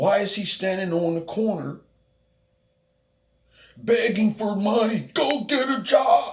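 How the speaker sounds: over-the-top, theatrical, high and drawn-out delivery. Retelling what a guy was heard saying: dramatic imitation of a guy. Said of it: "I'm being all dramatic, but this is how, like, how he was sounding".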